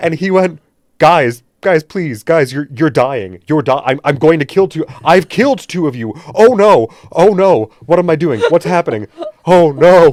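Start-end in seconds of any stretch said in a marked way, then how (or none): 1.0-10.1 loud pleading that spirals into mounting panic. Recounting a game's first episode, you act out him warning his players, imitating someone's growing fear and panic. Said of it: "you could see slowly the fear and panic enter his eyes".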